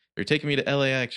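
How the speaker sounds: high-pitched screaming. Narrator retelling a kidnapped courier screaming over helicopter blades: imitating a scream. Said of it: "she screams".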